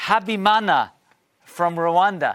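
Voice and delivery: slow, careful pronunciation. Host reading out a viewer's email and the sender's name, said slowly. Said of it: "I had to say that slowly".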